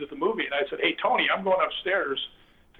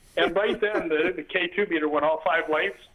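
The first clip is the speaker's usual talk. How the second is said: plain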